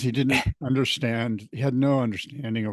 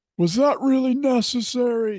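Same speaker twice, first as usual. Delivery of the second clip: very high, shrill, screamed, complaining tone; 13 semitones higher, 4 dB louder than usual. Retelling how random guys screamed at them after a fall while surfing, imitating the screaming. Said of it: "some rando guys like screaming at me".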